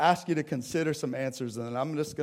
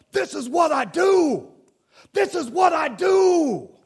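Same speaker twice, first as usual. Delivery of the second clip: high, loud, shrill, booming, drawn-out triumphant yell; 10 dB louder than usual. Retelling a quarterback's celebration after a great comeback, retelling Patrick Mahomes yelling. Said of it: "he's yelling".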